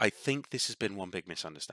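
quiet, soft, hushed half-whisper. Voicing a forest dryad apologizing to a stranger: half-whispering dryad. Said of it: "she kinda, like, whispers".

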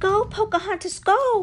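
very high, loud yelled cheer. Cheering on a friend as her canoe zooms past: yelled. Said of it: "Nakoma yelled".

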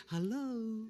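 sudden, soft, sugary, sweet voice. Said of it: "from thunder and lightning ... to this beautiful summer's day".

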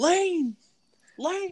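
joking, very high, loud yell.

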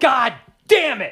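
high-pitched, loud, slow, angry raging yell. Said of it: "all of my anger was got out in the car".

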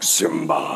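regal, kingly lion father voice. Comparing a scene to Lion King: Mufasa voice. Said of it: "Mufasa's like".

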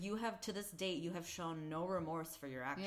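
plain

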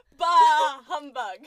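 very loud, high shout into the microphone. Asked to say it really loud into the microphone, really loud. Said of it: "just like really loud in the microphone".

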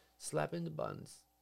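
ordinary delivery

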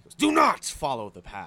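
put-on loud shout, each word stretched slow. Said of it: "He was, like, shouting".

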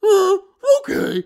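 very high, very loud cartoon dog voice. Retelling a Scooby-Doo scene, doing Scooby-Doo's reply: Scooby-Doo voice. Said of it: "And he goes".

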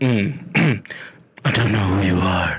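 whispered movie-star impression. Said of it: "That just sounds like you're whispering".

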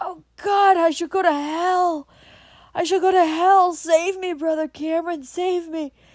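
very loud, high terrified scream, "hell" drawn out. A dying man pleads with Brother Cameron, screaming in terror. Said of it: "he screamed".

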